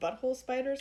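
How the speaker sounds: plain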